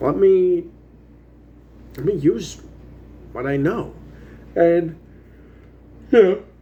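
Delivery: yawning, halting speech. Recalling the end of Sketch thirty Films, talking through a yawn. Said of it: "sorry for yawning".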